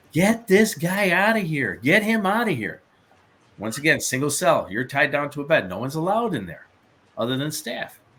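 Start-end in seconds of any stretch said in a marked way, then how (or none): 0.1-2.8 high-pitched screaming at the top of the lungs. Retelling how a restrained man screamed in the night: imitating someone screaming. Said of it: "starts screaming at the top of his lungs".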